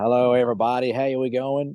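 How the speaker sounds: bad, terrible, fake put-on American accent. Greeting podcast listeners from the United States, in a terrible American accent. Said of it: "that's a terrible American accent".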